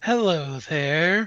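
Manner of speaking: sibilant, hissing snake voice. Narrating the scene, the storyteller speaks as the lindworm in a hissing lindworm voice. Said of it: "the lindworm hisses".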